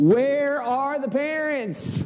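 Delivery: very high, thick, dripping Southern drawl. Speaker repeats the phrase the mother-in-law said over and over, as an impression of her. Thick Southern drawl. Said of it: "it's just like dripping with Southern drawl".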